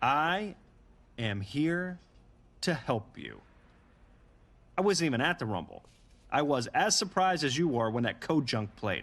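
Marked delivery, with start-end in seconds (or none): 0.0-3.4 slow, one word at a time with pauses. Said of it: "I'm gonna say this slowly".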